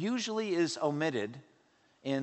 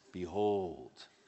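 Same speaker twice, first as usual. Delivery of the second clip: very low, weighty, deep voice on "behold"; 8 semitones lower, 3 dB quieter than usual. Showing how the word Behold should be said: deep voice on 'Behold'. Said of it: "you have to say it with a kind of a deep voice".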